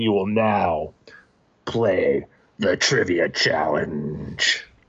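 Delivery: deep, slow, sinister booming demon voice. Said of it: "the voice is like".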